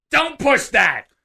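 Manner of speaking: piercing very high yell. Retelling an employee at the airport door: imitating a woman yelling. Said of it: "and she yells".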